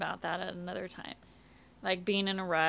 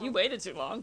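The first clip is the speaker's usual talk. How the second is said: ordinary talk, nothing marked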